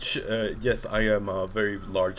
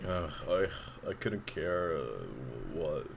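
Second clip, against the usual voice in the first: put-on bored villain voice, lower and quieter; 6 semitones lower, 10 dB quieter than usual. Recalling how someone voiced Sephiroth: bored Sephiroth voice. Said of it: "Just straight up bored".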